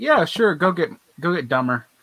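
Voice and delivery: plain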